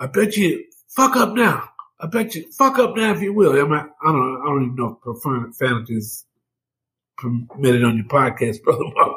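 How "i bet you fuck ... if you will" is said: acted-out high, screaming yell. Speaker retells a man screaming at another man, imitating someone screaming. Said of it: "He screams as he gets".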